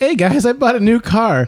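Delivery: mock overjoyed, very high-pitched and thrilled voice. Retelling arriving with a new car: imitating own past excited tone. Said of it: "I was all happy and all excited".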